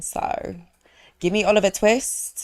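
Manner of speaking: put-on British accent. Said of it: "such a good British accent right now".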